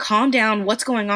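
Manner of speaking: ordinary talk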